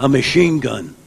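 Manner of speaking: mock, bone-dry, sarcastic tone. Retelling a friend's retort to a guard: imitating Jack Benny's sarcasm. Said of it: "Jack says to him sarcastically".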